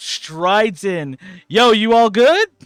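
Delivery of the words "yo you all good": put-on very loud, very high, cocky swaggering teen voice. Voicing a character who strides in and greets a group: swagger of a teenager. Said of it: "with the swagger of a teenager".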